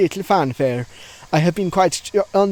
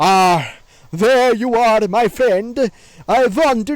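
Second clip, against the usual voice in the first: very slow, put-on Swedish accent; 3 semitones higher, 3 dB louder than usual. Voicing a game character who has no voice acting, try a Swedish accent. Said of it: "I can't do a fucking Swedish accent".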